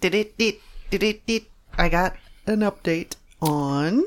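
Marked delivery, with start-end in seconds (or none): 0.0-1.4 stammering with words catching and stumbling restarts. Starting to give an update on the radio, stuttering. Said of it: "Now I'm just stuttering".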